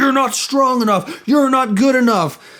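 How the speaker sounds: mild yell, pitched high. Retelling how an angry coach yelled at new recruits, imitating Coach Oliver yelling. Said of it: "and so he's yelling at them".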